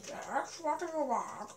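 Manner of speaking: badly done, terrible dog voice. Voicing your dog coming over to you, do a really bad dog impression. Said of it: "a really bad impression of a dog".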